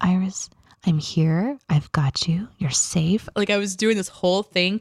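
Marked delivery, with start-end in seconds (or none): 0.0-3.3 slow, tender, soothing, gentle reassuring tone. Retelling calming Iris by speaking into her covered ears, retelling talking gently. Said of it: "and talk gently to her".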